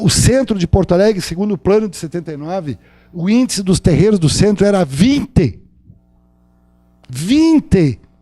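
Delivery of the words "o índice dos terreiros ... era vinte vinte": put-on southern Brazilian gaúcho accent. Lecturer giving an example from Porto Alegre: put-on gaúcho accent. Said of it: "Estou fazendo bem um sotaque gaúcho".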